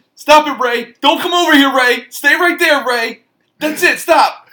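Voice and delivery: loud, high, slow and scared voice. Doing a requested impression of a frightened film character: Michael Rapaport impression. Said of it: "His only impression I could do, Mike Rappaport".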